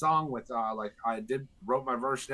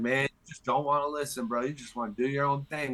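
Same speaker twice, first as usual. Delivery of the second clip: put-on teasing, joking tone; 3 semitones higher than usual. Quoting what another man said about him putting out music, retelling a joking remark. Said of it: "Like saying it in a jokingly manner".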